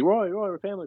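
high-pitched shouting, calling out. Retelling a story of a stranger calling out to a man: retelling a yell. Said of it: "So he's yelling".

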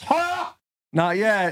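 laugh and speech in a marble-mouthed voice. Speaker retells a man's reply about being broken up with, imitating Buck's laugh. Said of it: "That's my depiction of his laugh".

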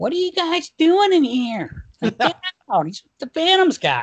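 very high, squeaky, bouncy, swooping coach voice. Retelling what a coach said at the door: imitating Hitch's high-pitched voice. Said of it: "why do they sound the same?".

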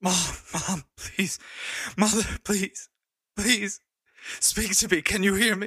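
gasping near-scream. A character pulls glass off their mother's body, panting, almost screaming. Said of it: "panting and like almost screaming".

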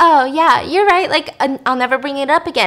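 play-acted, scared, placating, appeasing tone. Retelling a scene where he gives in to her, imitating a scared reply. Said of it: "he's scared of her almost".

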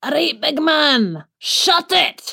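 high-pitched Scottish accent impression. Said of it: "impression of my husband in a Scottish accent".

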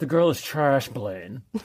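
put-on lockjaw voice, jaw held tight. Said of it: "in my best, uh, James Spader voice".

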